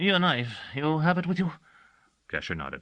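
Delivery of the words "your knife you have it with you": high, nervous, uneasy voice. Reading a story, the administrator asks about the knife: high, nervous voice. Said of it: "in a high, nervous voice".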